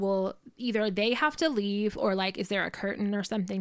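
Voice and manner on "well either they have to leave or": usual speaking voice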